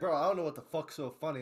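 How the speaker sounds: ordinary talk, nothing marked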